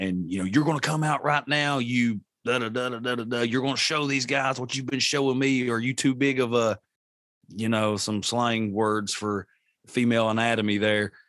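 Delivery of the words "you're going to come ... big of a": put-on berating, goading rant, screaming but contained. Retelling provoking a ghost in the house: retelling own screaming. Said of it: "screaming at".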